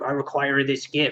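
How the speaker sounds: put-on sinister, evil little dwarf voice. Retelling a story where a little dwarf demands a gift: put-on little dwarf voice. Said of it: "think about this voice".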